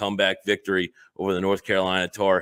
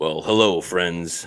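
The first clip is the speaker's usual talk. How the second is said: put-on golf announcer voice; 2 semitones lower, 4 dB louder than usual. Opening a show with a greeting: Jim Nantz impression. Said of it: "in my best Jim Nantz impression there".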